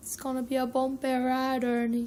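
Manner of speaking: really terrible, botched Jamaican accent. Speaker repeats a line they often say, in a really terrible jamaican accent. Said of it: "in a really terrible Jamaican accent".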